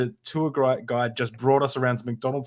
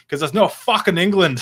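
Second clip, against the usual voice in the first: bad put-on Scottish accent, higher and louder; 5 semitones higher, 7 dB louder than usual. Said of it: "I can't do an accent very well".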